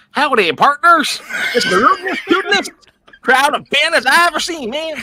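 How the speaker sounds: very high, shrill, very loud cartoon cowboy holler. Asked to speak with an accent, greeting everyone: Yosemite Sam voice. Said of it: "Sound like Yosemite Sam".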